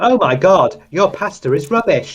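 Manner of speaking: very high-pitched automated text-to-speech narrator voice. Complaining about the TikTok voice in YouTube adverts; TikTok text-to-speech voice. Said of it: "automated like TikTok lady voice".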